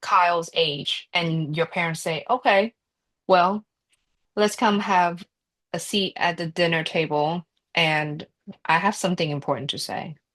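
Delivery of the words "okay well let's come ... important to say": usual speaking voice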